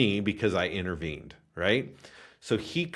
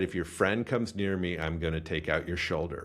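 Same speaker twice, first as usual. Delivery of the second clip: put-on whisper, quieter; 3 semitones lower, 6 dB quieter than usual. Retelling a fight, repeating a threat into an attacker's ear: retelling a whispered threat. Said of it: "I whispered in this guy's ear".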